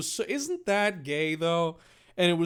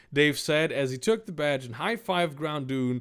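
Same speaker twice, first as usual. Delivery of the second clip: usual speaking voice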